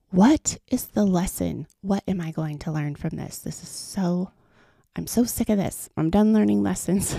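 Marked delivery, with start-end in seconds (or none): none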